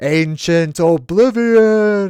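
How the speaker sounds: big, loud, echoey booming narrator voice. Speaker showing how a paid voice would say a phrase, big echoey voice. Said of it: "in like a big echoey voice".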